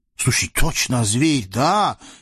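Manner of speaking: genuine, heartfelt indignant outburst. The sultan speaks up, sincerely indignant. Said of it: "искренне возмутился султан".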